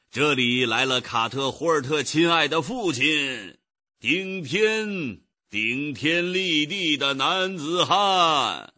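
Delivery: weighty, emphatic, heavy stress on each word. Reading a novel aloud, the father driving a horse cart makes an announcement, emphatic. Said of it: "他加重语气说".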